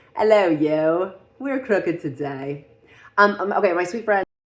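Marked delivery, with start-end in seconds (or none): 0.2-2.7 loud, slow, sing-song, swooping, drawn-out put-on voice. Joking about a crooked camera, slipping into a Moira Rose voice. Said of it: "go back into my Moira Rose voice".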